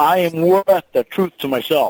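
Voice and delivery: loud, confident, said with real conviction. Coaching someone to repeat an affirmation before a game, said with more confidence. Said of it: "can you say it with more confidence".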